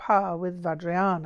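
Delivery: ordinary delivery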